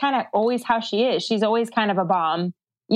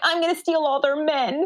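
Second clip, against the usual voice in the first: small, pouty, sulky put-on little voice; 5 semitones higher than usual. Describing a woman who is there to make trouble, imitating her little pouty voice. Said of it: "In her little pouty voice".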